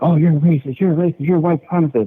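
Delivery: acted, high, heated, hostile accusing outburst. Retelling what TSA agents yelled at the airport: imitating agents screaming. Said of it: "agents screaming at me".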